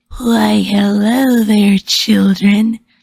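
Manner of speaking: loud, menacing, barely human growl. Narrator voicing a masked woman at the door speaking to children: menacing growl. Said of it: "she growled in a menacing voice that barely sounded human".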